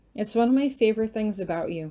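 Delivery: plain reading voice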